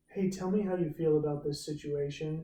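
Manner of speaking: ordinary delivery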